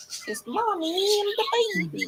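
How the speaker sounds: very high cartoon voice swooping way up and around. Cooing to someone before bed, in a Mickey Mouse voice. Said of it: "You sound like a Mickey Mouse".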